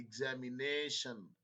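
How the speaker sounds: examination with the na syllable stressed. Explaining english word stress, says examination with stress on 'na'. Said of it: "दो में nation वाले पे ज्यादा जोर आ रहा है".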